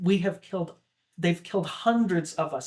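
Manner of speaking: normal talking voice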